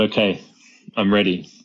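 plain

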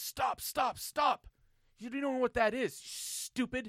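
mock screaming, high, loud berating outburst. Telling a story about a man berating workers, retelling someone screaming. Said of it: "he's screaming and berating".

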